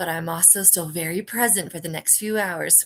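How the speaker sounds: telepathic whisper. Speaking in character into everybody's heads: whispering into minds. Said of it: "I whisper in everybody's heads".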